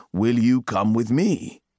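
plain reading voice

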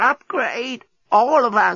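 put-on very high croaking old voice. Narrator reads a creature addressing the despot, croaking ancient voice. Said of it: "croaked in an ancient voice".

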